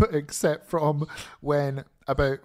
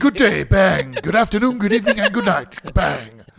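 loud, pitched-up, belted anime-character voice; 6 semitones higher, 8 dB louder than usual. Mocking a wrestler's closing promo: imitating Kenny Omega's anime-character talk. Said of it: "I talk like an anime character".

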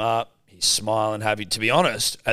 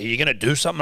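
put-on loud yelling, woman's voice; 4 semitones higher, 3 dB louder than usual. Retelling what a woman yelled at them, imitating a woman yelling. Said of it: "This woman's like yelling at us".

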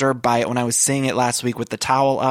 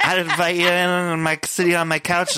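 put-on slurring drunk voice, pitched higher; 5 semitones higher than usual. Retelling what a drunk Dorinda said to Carol: drunk Dorinda impression. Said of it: "when Dorinda was really drunk and she's talking to Carol".

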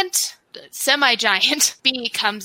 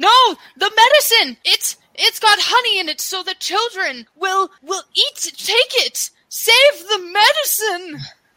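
put-on frantic, high-pitched, panicked old man voice, stumbling; 8 semitones higher than usual. Voicing a blind old man as bees circle the medicine: panicked blind old man. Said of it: "the blind mouse looks around".

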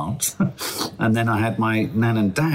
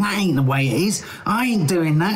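put-on London Cockney accent, pitched up; 8 semitones higher than usual. Recalling how they talked at home before their nan drove it out, cockney accent. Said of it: "I would always arrive with a Cockney accent".

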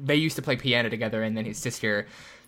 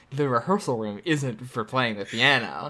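normal talking voice

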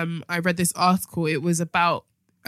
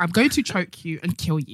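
put-on aggressive robot voice. Acting out what a sex robot would say: acting as an aggressive sex robot. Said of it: "if I was a sex robot, that's what I would say".

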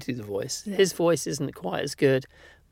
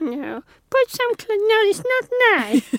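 put-on grandmother voice, higher and louder; 5 dB louder than usual. Retelling grandma fussing about naked babies in the pool: imitating grandma's voice. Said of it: "she'd go".

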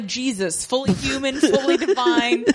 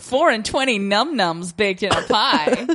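sassy, cheeky, low-pitched delivery; 4 semitones lower than usual. Joking with a co-host about a crow that is also a chicken, sassy. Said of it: "I liked how you said that all sassy".

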